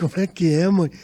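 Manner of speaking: words spoken through laughter. Retelling what the speaker said to their mother, re-enacting a laughing reply. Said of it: "Mas falei rindo".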